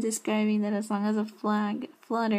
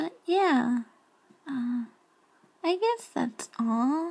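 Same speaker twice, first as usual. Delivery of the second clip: high squeaky voice, higher pitch; 4 semitones higher than usual. Wrapping up while short on sleep, squeaky high-pitched voice. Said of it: "with this little squeaky voice".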